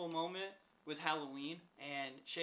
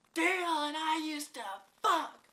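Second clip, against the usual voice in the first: very loud, very high-pitched shriek; 12 semitones higher, 10 dB louder than usual. Retelling a neighbor yelling from her window at a man in the parking lot: imitating a neighbor yelling. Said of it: "she's just yelling shit".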